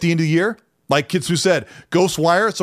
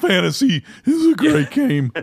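high voice cracking and breaking mid-phrase; 7 semitones higher than usual. Talking about Final Fantasy, voice cracking. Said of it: "my so- voice cracks".

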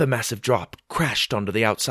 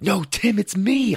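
high, drawn-out, carrying shout; 8 semitones higher than usual. Reading Will shouting back to the voice from the muddy hole, shouting. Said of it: "I shouted".

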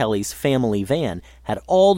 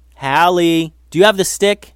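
loud, high-pitched hollering; 5 semitones higher, 5 dB louder than usual. Eli calls to his sister Hallie about the missing stick, hollered. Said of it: "he hollered to her".

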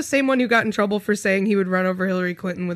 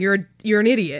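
ordinary delivery

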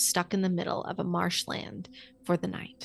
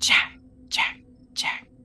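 hissing voice. Narrating a story in a silent swamp, an unseen voice calls out: hissing voice. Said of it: "The voice hissed".

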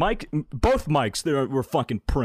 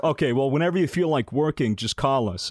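normal talking voice

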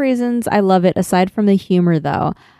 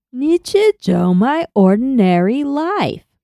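smiling put-on voice, higher and slower; 4 semitones higher than usual. Imitating the TikTok voice lady reading a title aloud; TikTok voice lady impression. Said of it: "You just sound like you're smiling".

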